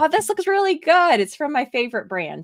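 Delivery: sarcastic enthusiasm, high sing-song gush. Retelling a first look at a pet product, sarcastic retelling of own words. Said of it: "That was sarcasm for everyone".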